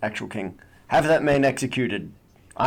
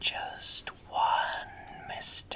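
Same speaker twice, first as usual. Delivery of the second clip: little, hushed whispered voice. Suggesting a sentient sword for the game, demonstrating its little whispered voice. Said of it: "this little whispered voice in the back of your head".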